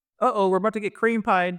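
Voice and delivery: put-on thick, nerdy, goofy, very high Canadian accent. Retelling a gaming moment, the speaker quotes a guy who spun around; goofy Canadian accent. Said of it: "like a really like goofy Canadian voice, like the thick accent".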